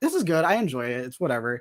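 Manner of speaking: plain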